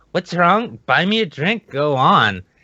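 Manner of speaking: high, cajoling, mock drunk woman voice. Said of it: "this drunk as fuck skank comes up and she's like".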